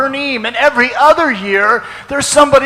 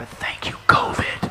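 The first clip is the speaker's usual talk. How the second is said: very quiet hushed whisper, barely voiced. Giving a class to devotees, thanking covid: said very quietly. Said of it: "I'm gonna say this very quietly".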